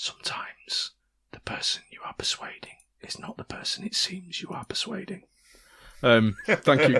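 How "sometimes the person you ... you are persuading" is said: hushed whisper under the breath. Playing a character who winks at another and whispers under his breath. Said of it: "whispers under his breath".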